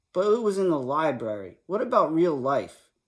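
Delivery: plain reading voice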